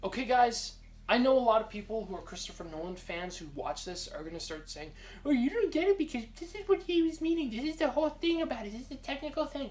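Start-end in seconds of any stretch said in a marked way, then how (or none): 5.2-9.7 very high, whiny, complaining fanboy voice. Imitating Christopher Nolan fans who watch this, in a mock-whiny fan voice. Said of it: "I know you don't sound like whiny people, but I'm doing that voice".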